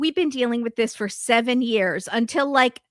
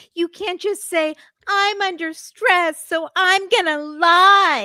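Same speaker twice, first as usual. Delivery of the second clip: mocking, sarcastic, pitched up, drawing out lie; 7 semitones higher, 3 dB louder than usual. Retelling what Molly said to Sheena: imitating a mocking sarcastic tone. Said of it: "mocking, sarcastic thing".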